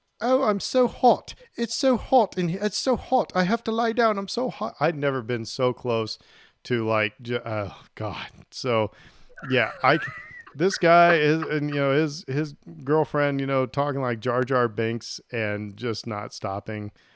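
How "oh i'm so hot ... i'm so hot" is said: very high voice with badly faked English accent. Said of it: "my English accent sucks".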